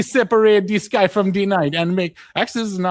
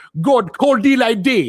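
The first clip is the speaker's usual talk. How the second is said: angry put-on Jamaican woman's accent; 3 semitones higher than usual. Reading the creation story aloud, the speaker does an angry Jamaican woman voice. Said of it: "I'm gonna do an angry Jamaican woman now".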